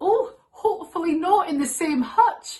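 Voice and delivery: joking put-on Scottish accent, high and loud. Retelling their mum's joke to an italian caller, imitating a scottish accent. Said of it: "said in his thick Italian accent".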